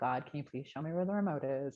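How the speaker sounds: acted snarky, grudging, sarcastic tone. Retelling how the oldest son asked God for the remote: imitating sarcastic prayer. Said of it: "Kind of, like, sarcastic".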